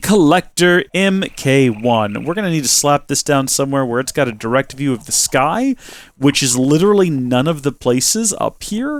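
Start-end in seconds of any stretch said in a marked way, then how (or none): none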